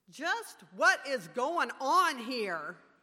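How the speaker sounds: booming, very loud, commanding, authoritative voice. Recalling standing up while others prayed: retelling an authoritative demand. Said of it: "demanded with an authoritative voice".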